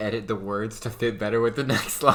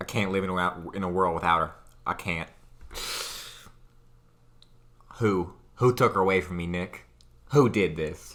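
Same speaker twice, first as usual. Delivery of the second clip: low, put-on Western cowboy voice; 4 semitones lower than usual. Performing edited lines aloud as a fun experiment, in a cowboy voice. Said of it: "cowboy voice for him".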